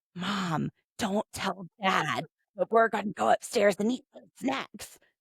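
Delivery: loud stage whisper, audible to all. Retelling how Jake tells Mom a secret: imitating Jake's loud whisper. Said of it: "he whispers so loud".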